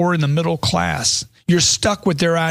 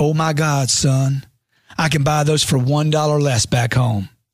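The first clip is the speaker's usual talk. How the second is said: put-on US southern accent; 2 semitones lower than usual. Recounting his mom at the grocery store, imitating her southern accent. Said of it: "She said in her southern accent".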